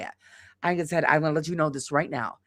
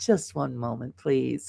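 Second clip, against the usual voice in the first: soft, low, fake courteous service tone; 4 semitones lower, 5 dB quieter than usual. Retelling her reply to a rude complaining woman, in a fake-smile polite tone. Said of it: "had that fake smile on".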